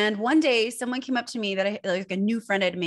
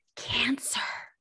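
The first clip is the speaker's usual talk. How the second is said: whispered, barely voiced, breathy whisper; 2 semitones higher, 4 dB quieter than usual. Retelling what a woman asked, imitating a whisper. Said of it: "and she whispered it".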